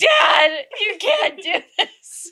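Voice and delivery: put-on slow, drawn-out, stretched-out child's yell. Retelling begging her dad on the christmas stairs: imitating her childhood screaming. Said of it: "screaming at him".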